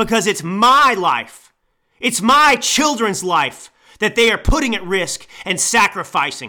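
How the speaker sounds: angry, furious yelling. A 34-year-old millennial yelling into the microphone, angry yelling. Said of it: "that's why I'm pissed off yelling into this microphone right now".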